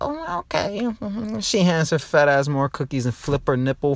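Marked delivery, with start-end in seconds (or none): 0.0-0.8 prim, very high-pitched lady voice.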